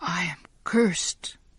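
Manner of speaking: hushed whisper. Narrating a story where a character whispers to himself, in a whisper. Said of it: "Giovanni whispered to himself".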